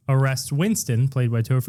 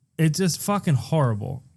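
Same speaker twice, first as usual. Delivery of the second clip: usual speaking voice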